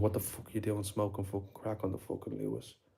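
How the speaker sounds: mock fuming, low, furious rant. Retelling how a friend confronted someone smoking crack, retelling a friend's angry outburst. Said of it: "My friend went mad and he was like".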